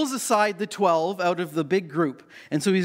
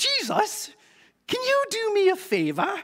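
very high, swooping, sketch-comedy mum voice; 13 semitones higher than usual. Retelling a Bible story, the speaker voices a mother pushing in among the twelve: Monty Python impersonation. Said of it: "That's my Monty Python impersonation".

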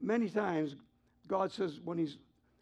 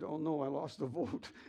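imitated tearful, crying voice; 2 semitones lower, 4 dB quieter than usual. Retelling how Greg came in crying: imitating someone crying. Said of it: "So in comes Greg crying".

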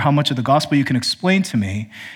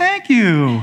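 polite, raised, pitched-up voice; 4 semitones higher than usual. Imitating someone thanking for a gift they don't like: raised pitch. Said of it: "They'll raise their pitch in their voice and go".

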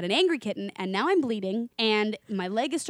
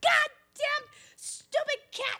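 mock, very high, drawn-out, angry cursing outburst. Retelling coming out of the bathroom after a cat scratched him: reenacting an angry outburst. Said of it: "I come out of the bathroom and I'm pissed off".

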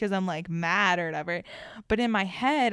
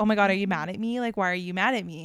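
acted anxious, pushy pleading tone. Retelling how she kept asking him if he was mad at her, retelling her own anxious pleading. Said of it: "I get all, like pushy and anxious".

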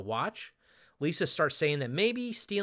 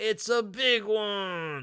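weird, very slow, high, put-on Mexican accent; 6 semitones higher than usual. Recapping a scene where a character grabs a big silver trophy, in a weird mock Mexican accent. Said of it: "in like a weird mock Mexican accent".

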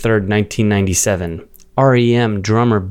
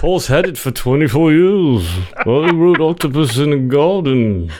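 put-on Liverpool voice, higher; 4 semitones higher than usual. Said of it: "I've never heard your [name]".

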